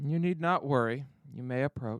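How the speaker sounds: ancient-sounding elder voice calling out. Narrating, the speaker voices a very old Twi'lek calling out to someone approaching the campsite. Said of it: "you see a very old Twi'lek".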